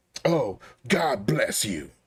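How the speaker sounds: spiteful, venomous, swooping sing-song voice. Mocking how people say a blessing: imitating a spiteful "God bless you". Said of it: "do I despise it when you hear people".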